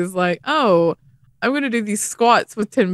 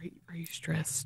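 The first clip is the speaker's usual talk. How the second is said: hushed, lowered whispered voice; 4 semitones lower, 19 dB quieter than usual. Retelling how people ask him questions, in a lowered voice. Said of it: "normal conversation and lower voice".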